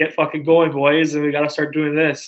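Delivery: acted, loud, swearing yell. Retelling a player yelling at teammates during intermission: imitating Joe Pavelski yelling. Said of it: "he was just yelling at the guys".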